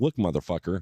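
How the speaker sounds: acted low, matter-of-fact menace. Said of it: "with his finger out and just talking low".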